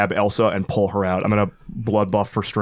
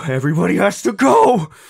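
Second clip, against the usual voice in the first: voice cracking near panic, very high and loud; 10 semitones higher, 6 dB louder than usual. Voicing a character about to fully panic: near-panicked shout. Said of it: "two steps from a full panic".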